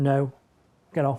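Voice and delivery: firm, a bit stern, no-nonsense voice. Showing how to tell a dog to get off: a bit stern. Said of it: "That's when you do need to be a bit stern".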